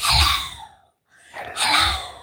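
soft, hushed whisper with no voice. Showing how to whisper hello while explaining a breath: whispering. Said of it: "how would you whisper hello?".

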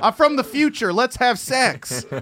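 put-on Philadelphia accent. Riffing on the movie Looper with the group, in a Philly accent voice. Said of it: "What is this voice?".

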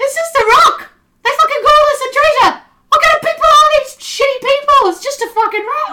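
very high, very loud, shrill yelling. A narrator voices a character who yells out, yelling. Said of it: "he yells out".

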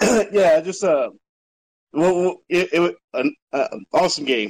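excited, stuttering speech. A guest asked for his take on the game, excited and stuttering. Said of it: "Sorry, I'm stuttering, but I'm just so excited".

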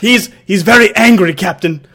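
bad put-on Scottish accent. Attempting a Scotty accent, then admitting accents fail: bad Scotty accent. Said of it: "was this Scotty he's talking about?".

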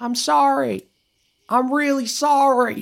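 very high, slow, drawn-out yell, sounding distant. Voicing a distant voice the players hear: Cooter yelling from a distance. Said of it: "a distant voice yelling".

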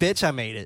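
ordinary talk

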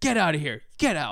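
put-on, super angry, furious tone. Retelling a bartender throwing the speaker out: imitating an angry bartender. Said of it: "he gets super pissed and he's like".

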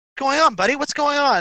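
soothing, calming, reassuring tone. Narrating a scene to you, calming a nervous pack Brahmin buddy; soothing. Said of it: "You try and calm him down".

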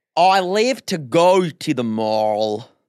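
slowed-down, poorly done mock American accent. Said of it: "slow everything down".

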